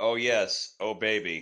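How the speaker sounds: dry, flat, expressionless deadpan delivery. Trying out a voice-clip line someone suggested, delivered deadpan. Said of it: "even in, like, a deadpan voice".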